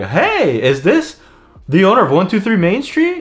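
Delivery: thrilled, energetic voice. Demonstrating the wrong way to answer the phone to a homeowner, excited. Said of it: "that excitement".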